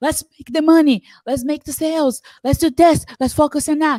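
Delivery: mock full-on furious raging, loud and shrill. Describing a woman's toxic leadership style, mimicking a boss's rage voice. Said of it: "now she's in her full rage voice".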